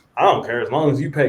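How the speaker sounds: slight, enthusiastic, loud, high southern twang. Retelling the landlord's reply, imitating an enthusiastic southern twang. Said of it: "He was a little enthusiastic".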